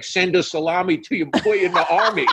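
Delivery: put-on high, jeering, old-fashioned heckling tone, shouted. Retelling how a neighbor yelled old insults from a window: imitating a neighbor yelling insults. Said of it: "he's yelling out of the window".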